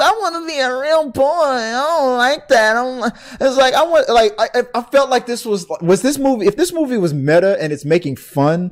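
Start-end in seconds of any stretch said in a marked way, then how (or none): 0.0-3.1 put-on annoying, whining, pitched-up little kid voice. Talking about a movie trailer, mimicking the kid in it; whiny kid voice. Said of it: "captured that whiny, annoying little".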